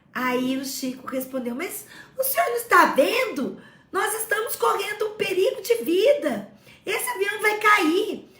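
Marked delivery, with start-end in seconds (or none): 1.5-8.1 frantic, terrified, high, panicked shout. Retelling Chico's words on a falling plane: imitating Chico shouting. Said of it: "E por que que você está gritando?".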